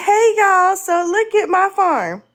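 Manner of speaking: put-on high, cheerful, natural country-girl voice. Retelling a video of a woman greeting viewers: imitating a happy country girl. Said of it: "country girl".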